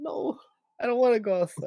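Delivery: high, whiny put-on cat voice. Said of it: "She's like".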